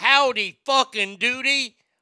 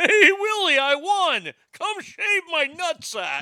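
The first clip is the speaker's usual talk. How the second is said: put-on alien puppet voice, higher; 6 semitones higher than usual. Announcing that Alf wins the puppet matchup: Alf voice. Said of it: "can we sound like Alf".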